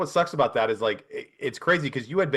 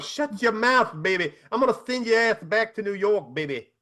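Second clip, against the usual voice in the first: very high-pitched, trash-talking wrestler promo voice; 9 semitones higher than usual. Imagining a wrestling announcer's reaction, imitating Dusty Rhodes. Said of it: "Dusty Rhodes is like".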